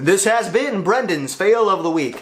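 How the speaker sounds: on-air radio announcer voice. Recalling a segment the hosts used to do, the speaker repeats its tagline: radio announcer voice. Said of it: "I love that kind of like radio announcer type of voice".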